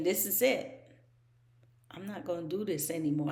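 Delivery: acted tearful voice. Speaker retelling what they said while crying in there, retelling crying. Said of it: "I was in there crying and saying".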